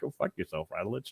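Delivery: very hushed, irritated, annoyed mutter. Retelling a friend's annoyed reply to a joke: imitating annoyed Ronnie. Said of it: "it annoys the piss out of Ronnie".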